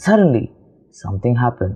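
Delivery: brief pause right after suddenly. Reading a sentence with a comma: short pause after suddenly. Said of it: "we will stop for a mini second and say".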